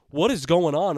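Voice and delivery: mock worked-up scream. Retelling watching a wild fight round: imitating screaming at the TV. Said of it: "I'm screaming at the T V".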